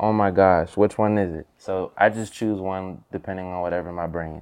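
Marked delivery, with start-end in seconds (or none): none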